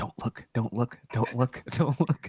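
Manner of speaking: hushed whisper, repeated under the breath. Voicing a character muttering to herself during a scene: whispering to herself. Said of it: "whispering to herself".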